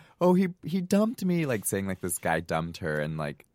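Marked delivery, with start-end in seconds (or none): 0.2-1.5 very high, very slow, drawn-out sobbing wail. Recounting a call where a friend got dumped, imitating crying and screaming. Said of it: "ends up just crying and screaming like crazy".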